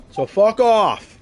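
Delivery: very loud, very high, shrill, furious shout. Telling off a caller on the phone: yelling angrily. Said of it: "I was just yelling at somebody on the phone".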